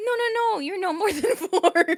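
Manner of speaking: sincere, reassuring insistence. Retelling how another speaker insisted on an age: imitating Minnie's sincere insistence. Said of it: "She said with such sincerity".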